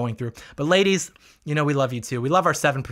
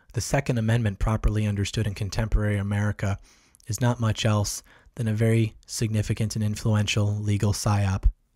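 mock ASMR-style speaking; 4 semitones lower than usual. Having fetched his coffee, a speaker addresses viewers in asmr mode. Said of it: "Commie ASMR".

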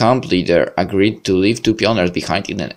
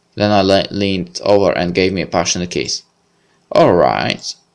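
ordinary delivery

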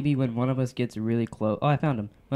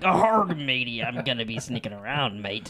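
slow, put-on storybook pirate voice. Pitching a pirate game video idea to the others: put-on pirate voice. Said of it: "if I could be a pirate".

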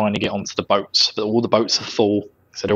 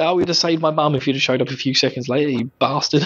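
usual speaking voice

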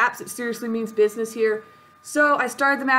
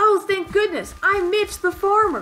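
high-pitched, far from manly voice; 8 semitones higher than usual. Voicing a farmer who calls out for help, unmanly Mitch the Farmer voice. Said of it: "Probably should have used a more manly voice for him".

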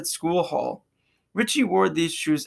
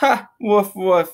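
short, light, amused chuckling laugh; 3 semitones higher, 5 dB louder than usual. Ella answers Noah's cold jab through a mouthful of food, chuckling. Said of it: "Ella chuckled".

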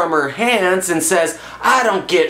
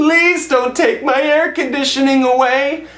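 high, mock crying, pleading over and over; 7 semitones higher than usual. Retelling a movie scene as the woman begging the man: imitating crying and begging.

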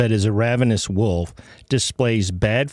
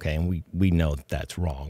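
sarcastic, mocking tone; 6 semitones lower, 7 dB quieter than usual. Criticizing a teaching, then saying it is wrong: sarcastic. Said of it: "I'm being sarcastic".

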